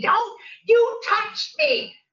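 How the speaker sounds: very high, shrill, stretched-out screech. Retelling a street confrontation, quoting the woman filming: retelling a scream. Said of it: "she starts screaming".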